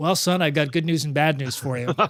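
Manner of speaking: unfazed, easygoing, laid-back laconic understatement. Retelling his dad's reaction after the car engine explosion: imitating a laid-back, laconic dad. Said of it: "He's a very sort of laid back, laconic guy".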